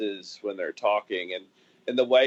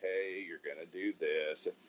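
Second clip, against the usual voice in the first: put-on calm, cool voice, lower and quieter; 4 semitones lower, 11 dB quieter than usual. Contrasting how Mike usually sounds, imitating Mike, calm and cool. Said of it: "It's not calm, cool Mike".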